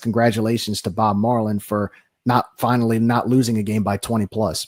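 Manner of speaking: ordinary talk, nothing marked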